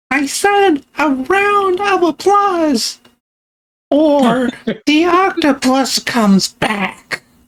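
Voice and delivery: tiny, squeaky, very high little character voice. Speaker voices a character demanding a round of applause: squeaky voice. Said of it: "this is coming from a squeaky voice".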